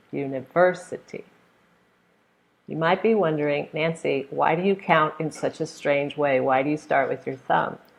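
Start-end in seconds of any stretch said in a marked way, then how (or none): 0.2-1.3 university with third syllable stressed. Repeating the word after counting its syllables: stress on 'ver' in university. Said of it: "Stress is on the third one".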